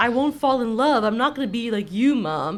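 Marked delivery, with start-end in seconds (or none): none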